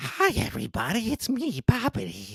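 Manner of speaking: very high, swooping, drawn-out character voice. Recalling a cartoon character, imitating his greeting: Bobbity voice. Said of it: "He had that, ... voice".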